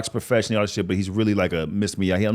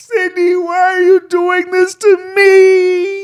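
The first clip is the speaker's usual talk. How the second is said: very high, very loud, very slow wailing cry; 10 dB louder than usual. Retelling a voicemail from the next morning: imitating someone crying. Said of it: "The next voicemail is her crying, saying".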